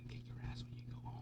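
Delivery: hushed, menacing, threatening whisper, barely audible. Retelling how a parent leans in during public misbehavior: imitating a parent's threatening whisper. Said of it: "lean in and whisper".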